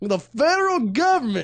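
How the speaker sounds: fake high Southern accent. Showing how a phrase has to be said, in a southern accent. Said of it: "cannot say without a southern accent".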